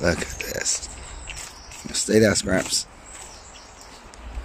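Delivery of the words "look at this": soft, sneaky whisper. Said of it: "I'll show you some sneaky, sneaky stuff".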